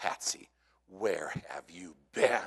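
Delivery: mock reproachful, scolding mother tone. Retelling how Mom greeted the dog at the back door, imitating Mom's scolding tone. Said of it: "In that tone of voice".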